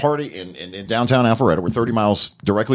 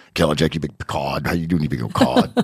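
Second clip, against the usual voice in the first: voice pushed way down, deep and dropped; 6 semitones lower than usual. Retelling how a man always greeted him, the speaker imitates his deep voice. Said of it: "He's got that deep voice, deeper than mine".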